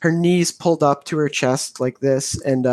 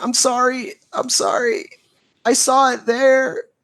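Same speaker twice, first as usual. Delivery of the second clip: very high, slow, drawn-out weeping and sobbing; 10 semitones higher than usual. Voicing a character sobbing in the corner of a closet: crying. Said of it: "she's crying and she's just like".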